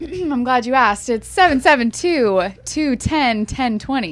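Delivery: radio announcer voice, on-air delivery. Asked for the company's phone number, the speaker answers in a radio voice. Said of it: "Look at her putting a radio voice".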